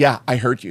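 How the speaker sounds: put-on flat delivery with no reaction. Retelling how the other person answered the joke: imitating a reply with no reaction. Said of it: "Like that, just, like, no re-".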